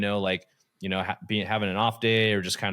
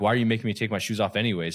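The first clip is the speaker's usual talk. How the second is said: testy, snippy, sassy tone with attitude. Retelling a traveler's words to a TSA agent: imitating someone with attitude. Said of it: "kinda with an attitude".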